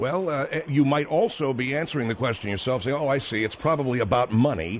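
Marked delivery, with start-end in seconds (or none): 3.0-4.8 low, sarcastic tone. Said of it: "you said it in a sarcastic way".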